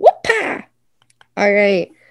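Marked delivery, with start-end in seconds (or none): 0.0-0.6 exclaimed with punch and emphasis. Saying the silly word for the story with an exclamation point: exclaiming the silly word. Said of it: "I added an exclamation point".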